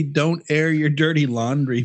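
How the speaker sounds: ordinary talk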